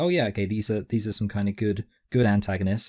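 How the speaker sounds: ordinary talk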